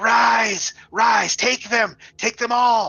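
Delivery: very high, rasping, throaty voice. Narrating a game scene of rattling bones, voicing an unseen speaker in a raspy, throaty voice. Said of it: "this raspy voice saying".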